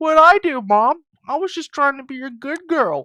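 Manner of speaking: put-on very high, loud, upset, pleading girl's voice. Voicing a game character who is upset: voicing an upset character. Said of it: "Jennifer's upset".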